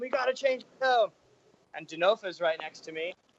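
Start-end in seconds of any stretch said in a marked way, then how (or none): 0.0-1.1 mock very high-pitched frantic screaming. Retelling yelling at the crew before a race: retelling a scream. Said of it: "I'm screaming at them".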